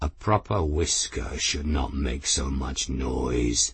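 deep, very low growled delivery. Raoul speaks to Myril; growling. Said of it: "Raoul growled".

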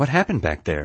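ordinary delivery

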